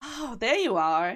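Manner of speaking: high, slow, teasing little sister voice.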